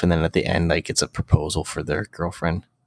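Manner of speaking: hushed whisper. Describing proposal games while the speaker's girlfriend is in the room, whispering. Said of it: "I like how you're whispering that".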